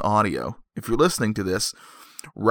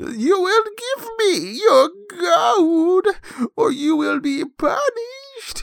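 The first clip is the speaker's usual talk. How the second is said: very high, slow storybook witch voice. Retelling a story, the speaker performs the woman's witch voice. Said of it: "That's my witch".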